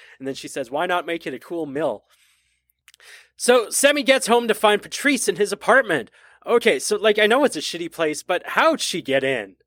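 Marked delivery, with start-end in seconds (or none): 0.7-2.0 voice dripping with sarcasm. Retelling a movie scene with a Western Union clerk: imitating a sarcastic clerk. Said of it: "sarcastic delivery from the Western Union woman".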